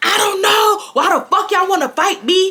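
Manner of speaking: angry cursing yell. Retelling how an angry friend yelled through a restroom door: imitating someone yelling angrily. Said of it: "Zebra's yelling at them saying they should fight me".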